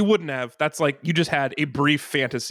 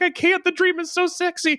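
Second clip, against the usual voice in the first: put-on weepy wail, very high, tearful crying. Retelling a woman's reply to a man demanding her dream, imitating someone crying. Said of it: "And she's crying".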